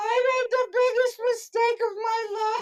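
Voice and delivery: very high-pitched, tearful sobbing voice. Recalling breastfeeding a newborn days after the birth, the speaker is imitating own sobbing. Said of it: "breastfeeding him and sobbing and going".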